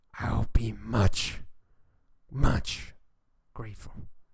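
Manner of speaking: put-on growling, saggy voice. Narrator voicing a character addressing the party, in a growling, saggy voice. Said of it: "So his voice is like growl and like saggy".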